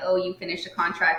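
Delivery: normal talking voice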